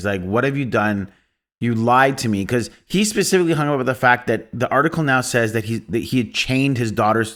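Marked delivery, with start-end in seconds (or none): 0.2-2.4 crying, tearful and accusing. Retelling a film scene where a father cries to the neighbor: imitating a man crying. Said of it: "when he cries to the neighbor".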